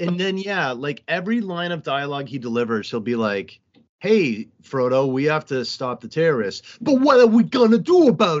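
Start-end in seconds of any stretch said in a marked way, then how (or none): 4.0-8.4 put-on overwrought, aggressive, swooping Italian accent. Mocking an actor's every line of dialogue, in an aggressive, overwrought italian accent. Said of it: "a really aggressive, overwrought Italian accent".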